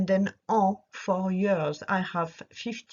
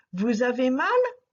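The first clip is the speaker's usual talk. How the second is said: pitch climbing up on mal; 4 semitones higher, 4 dB louder than usual. French lesson, turning a statement into a question: rising pitch at end on mal. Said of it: "raising your voice at the end".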